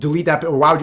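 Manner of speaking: normal talking voice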